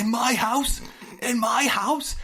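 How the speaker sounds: very high, drawn-out, freaked-out voice. Retelling a movie scene where a character freaks out: imitating Ken Marino freaking out. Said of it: "Ken Marino just freaks out".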